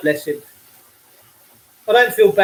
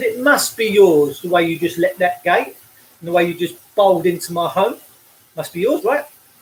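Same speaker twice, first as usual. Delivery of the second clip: plain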